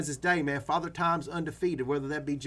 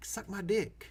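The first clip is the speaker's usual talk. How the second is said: teasing, joking whisper, soft, hushed and breathy; 4 semitones higher, 5 dB quieter than usual. Answering the voices urging you to hold, as a joke: joking whisper. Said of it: "Let me whisper back".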